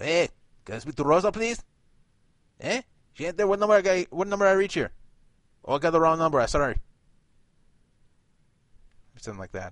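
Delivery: put-on Mexican accent. Acting out a caller asking for someone on the phone, in a put-on Mexican accent. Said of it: "i'm not impressed with your mexican accent".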